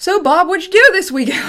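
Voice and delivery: very high, loud, sing-song, swooping radio reporter patter. Saying you sound like a radio, you mimic radio reporters: radio reporter voice. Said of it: "like very high tones and low tones".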